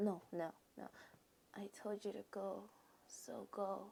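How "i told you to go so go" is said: faint, feeble, soft, strengthless voice. Reading a story aloud, stopping to imitate a character's quiet voice. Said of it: "let me imitate his quiet voice".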